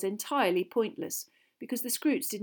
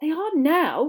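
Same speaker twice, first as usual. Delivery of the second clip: fed-up, exasperated, raised and pitched-up voice; 5 semitones higher, 7 dB louder than usual. Reading a story aloud, one character answers another, exasperated. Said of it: "said Hermione in an exasperated voice".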